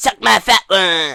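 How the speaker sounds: loud, slow put-on cartoon voice. Answering the haters with a Delightful Derek reference, Eric Cartman voice. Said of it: "I did an Eric Cartman voice".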